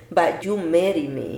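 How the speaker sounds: ordinary talk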